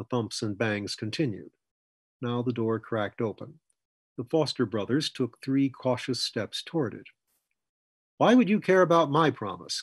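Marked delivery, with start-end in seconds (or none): 8.2-9.8 pressing, demanding, insistent tone. As a door cracks open, a character questions the one asking his promise, demanding. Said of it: "Coy demanded".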